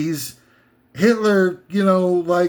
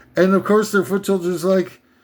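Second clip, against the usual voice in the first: usual speaking voice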